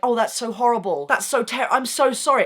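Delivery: high-pitched, sympathetic, sorry-for-you voice. Retelling how people respond to a shocking story: imitating people's sympathy. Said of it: "people would be like".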